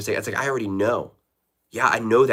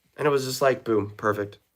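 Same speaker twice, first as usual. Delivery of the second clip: ordinary talk, nothing marked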